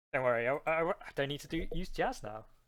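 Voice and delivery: ordinary talk, nothing marked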